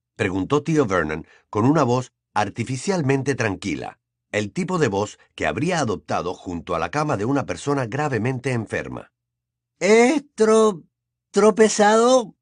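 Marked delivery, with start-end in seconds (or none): 9.8-12.2 very high, loud, trembling voice. A son answers his father's question, in a trembling voice. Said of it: "contestó Dudley con voz temblorosa".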